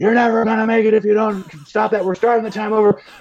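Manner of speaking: put-on very high, shrill screaming. Retelling how they screamed at the speaker struggling to stay afloat, retelling people screaming. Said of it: "they're screaming at me like".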